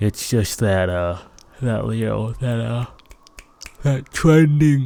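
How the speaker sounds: mid-yawn, words pulled out of shape. Chatting about what gets views on YouTube, talking through a yawn. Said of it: "Sorry, I'm yawning".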